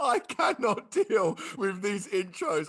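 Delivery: crying with laughter, high and loud. Reacting to a podcast intro, laughing to tears. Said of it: "I am actually crying".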